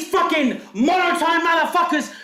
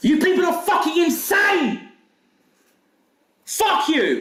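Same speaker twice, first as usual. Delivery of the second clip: furious, angry, letting rip, fuming. Responding to accusers after being slandered, angry. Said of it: "I'm fucking pissed off".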